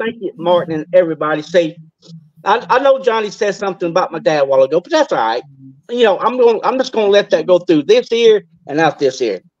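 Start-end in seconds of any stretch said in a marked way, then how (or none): 2.4-4.8 very fast, rushed talk. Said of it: "and you talk very fast".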